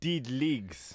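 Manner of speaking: put-on New Zealand accent. After a rugby injury update, repeating its last words in a Kiwi accent. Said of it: "I love that Kiwi accent".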